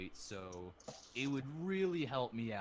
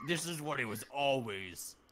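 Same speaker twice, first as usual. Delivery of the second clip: screechy devil voice, higher and louder; 4 semitones higher, 4 dB louder than usual. Voicing the weakened devil for the players: screeching devil voice. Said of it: "What happened to your voice?".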